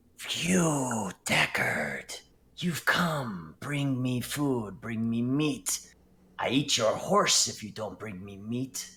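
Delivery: harsh rasping voice with the word "you" dragged out. Narrating a voice heard inside a character's head, in a rasping voice. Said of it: "it's like a rasping".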